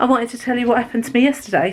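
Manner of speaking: out of breath, breathless. Starting to tell viewers what happened yesterday, out of breath. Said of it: "out of breath now".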